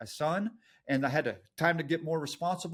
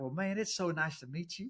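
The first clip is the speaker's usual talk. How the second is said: put-on East Texas accent; 4 dB quieter than usual. Retelling how talking to East Texans brings out the accent: put-on East Texas accent. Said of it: "my East Texas roots, they start coming through".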